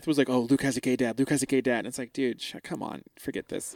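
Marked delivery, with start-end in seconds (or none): 0.3-1.8 put-on muttering, much quieter. Speaker recounts someone's jabs, retelling Seth muttering under his breath. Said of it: "under his breath".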